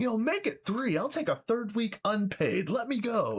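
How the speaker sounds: play-acted very high, fed-up, angry ranting. Speaker retells how they went off at work, acting out an angry rant. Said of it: "I was going off".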